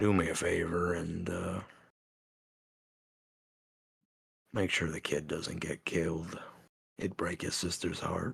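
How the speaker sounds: hushed, low, quiet voice kept close. Edmund puts his hand on the gold and leans in, in a low voice. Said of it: "in a low voice".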